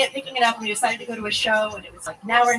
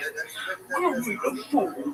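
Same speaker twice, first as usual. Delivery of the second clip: dumb, silly dog voice, quieter; 7 dB quieter than usual. Speaker voices a dog that wants to be fed, in a dumb dog voice. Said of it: "giving them really dumb voices".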